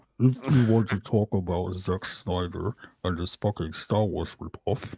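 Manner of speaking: very slowed-down slow-motion speech. Mentioning zack snyder after being asked: slow motion speech. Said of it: "you have to do it in slow motion".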